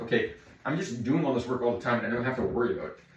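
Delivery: ordinary delivery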